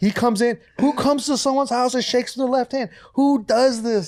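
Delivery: mock very high scolding angry rant. Retelling a mom's reaction to a friend's left-handed handshake: imitating a ranting mom. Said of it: "she goes on this whole tirade".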